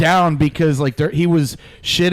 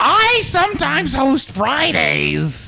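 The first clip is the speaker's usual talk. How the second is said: very high, very slow, creaky sing-song drawl; 11 semitones higher than usual. Doing an impression of someone for friends to guess: Ian Salyers impression. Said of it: "Let me do one more of his".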